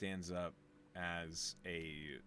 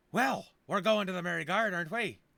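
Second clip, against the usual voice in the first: excitable dwarf voice, very high, loud and eager; 12 semitones higher, 13 dB louder than usual. Narrator voicing the dwarf as she greets the group: excitable Sigona voice. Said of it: "have this very excitable reunion".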